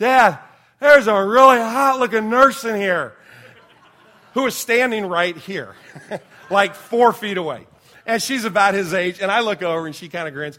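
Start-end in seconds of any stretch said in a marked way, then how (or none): 0.0-7.7 loud, high-pitched blurt, projected to the whole room. Retelling what his son said in the recovery room: imitating his son speaking loudly. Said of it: "And real loud, he goes".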